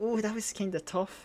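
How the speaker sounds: crying a little, soft high tearful voice. Mocking a teammate's small accomplishment next to fighting gods, mock-crying as Lisa. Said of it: "kind of like cried a little bit, being like".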